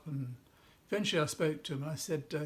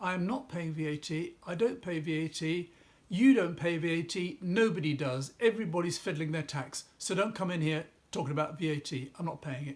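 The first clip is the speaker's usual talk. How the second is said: usual speaking voice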